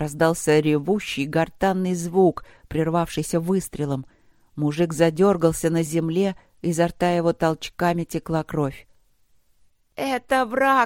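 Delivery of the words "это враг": high-pitched hysterical scream. A woman screams to the others right after a man is shot, hysterical scream. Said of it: "в истерике завопила женщина".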